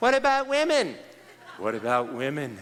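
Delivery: woman's voice, swooping and sing-song. Imitating an audience member asking about women: imitating a woman's voice. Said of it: "let me just imitate her".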